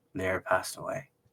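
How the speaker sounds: voice full of sorrow and grief. Retelling a film scene where the character answers about lyra: imitating a sorrowful line. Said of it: "you can hear the sorrow in his voice".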